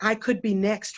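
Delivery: ordinary delivery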